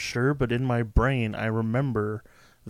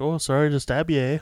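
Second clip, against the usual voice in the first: put-on Canadian accent; 4 semitones higher than usual. Quoting a line about a horror movie with nice people, put-on canadian accent. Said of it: "that was my Canadian accent".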